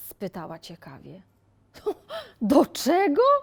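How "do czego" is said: very loud, shrill, high bursting outburst. Answering the young miss's curious question, she bursts out. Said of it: "Wybuchnęła Marta".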